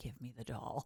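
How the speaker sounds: hushed, low, soft, stern tone.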